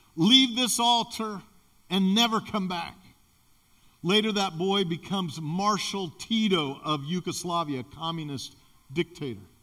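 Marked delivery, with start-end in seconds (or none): none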